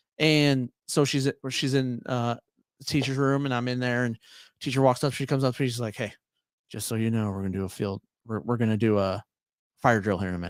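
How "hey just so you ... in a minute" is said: low, hushed, secretive half-whisper. Retelling a teacher's quiet warning about a fire drill: imitating a half-whisper. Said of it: "whispering it to me on the down low".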